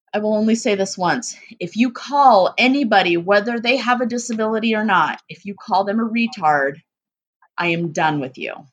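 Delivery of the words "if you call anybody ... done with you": ordinary talk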